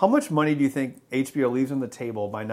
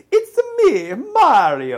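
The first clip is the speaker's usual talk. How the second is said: loud, high-pitched character voice. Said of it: "he's like".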